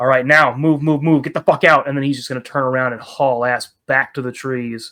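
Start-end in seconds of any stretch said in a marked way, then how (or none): 0.0-1.9 stage-style whisper. Voicing a character calling others out of a cave: loud whisper. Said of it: "loudly whisper".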